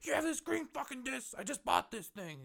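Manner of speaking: very high-pitched, screamed rant with an accusing tone. Retelling an angry stranger at a disc golf course: imitating someone screaming. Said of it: "screaming at him".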